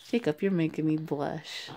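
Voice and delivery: ordinary talk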